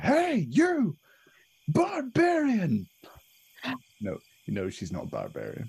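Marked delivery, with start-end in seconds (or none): 0.0-2.9 very high, swooping, half-shouted call. Playing Thoric, calling out to Sarg across the scene: Thoric sort of shouting. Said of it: "just sort of shouts to Sarg".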